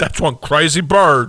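very loud, high, slow belted character voice. Doing a sketch comedy character on request: Brian Fellows impression. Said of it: "I can do Brian Fellows".

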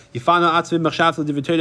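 plain

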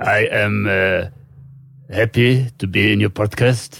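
put-on creepy Russian-accented voice. Asked for another nationality, doing a creepy Russian foreigner voice.

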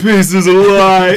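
high, loud, slow, whiny shouting voice.

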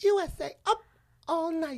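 put-on squeaky, very high girl's voice, very slow. Imitating how a girl with a high-pitched voice would say a line, high-pitched. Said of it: "she had the high-pitched voice, and she would be like, this is how she'd say".

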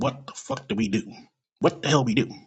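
ordinary talk

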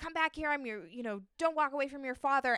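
put-on yelling voice. Retelling a scene where the father yells after his storming daughter: imitating a father yelling. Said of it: "yells at her".

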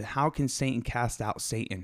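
normal talking voice

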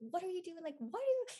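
put-on shrill, very high screaming voice. Speaker retells how their parents yell at them, imitating parents screaming. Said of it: "And they'll start screaming at me".

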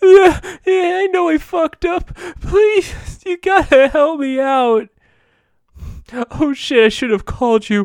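high, loud, hammy crybaby whine, hammed up. Recapping a scene where a character phones Hank, hammy crybaby Jason Todd impression. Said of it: "play that really hammed up crybaby actor".

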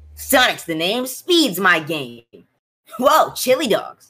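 high swooping cartoon voice. Friends trying video game impressions, one announces and does a Sonic voice. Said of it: "Doing a impression of Sonic".

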